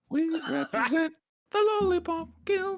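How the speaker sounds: squeaky, very high-pitched character voice. Answering a viewer's request to say something in a squeaky high voice. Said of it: "something with an uncharacteristically squeaky voice".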